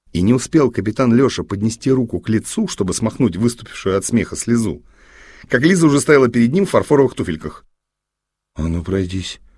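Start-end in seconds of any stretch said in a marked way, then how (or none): 8.5-9.3 whispered and slower. Captain Lyosha, with Liza standing before him in porcelain shoes, whispered. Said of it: "прошептал Леша".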